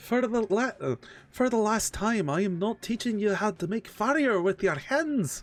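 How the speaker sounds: put-on Irish-accented voice. Roleplaying a character answering a companion's repeated request; irish accent. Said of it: "You went from British to fucking Irish".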